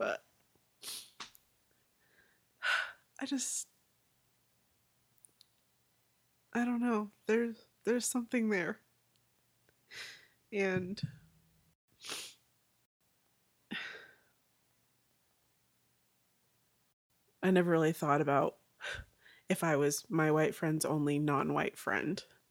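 tearful speech while crying. Feeling the emotional toll for the first time and unable to say why, speak while crying. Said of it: "why I'm crying right now".

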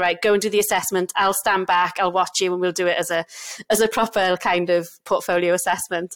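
ordinary talk

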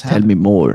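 loud, forceful, powerful commanding voice. Asking the other speaker to go on: powerful voice. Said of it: "that sounded very powerful".

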